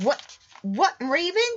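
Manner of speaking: shaky, trembling, high-pitched voice. Jack asks about the ravens, trembling voice. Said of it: "his voice trembling".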